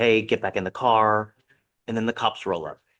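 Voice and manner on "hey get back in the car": ordinary delivery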